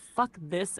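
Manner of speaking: plain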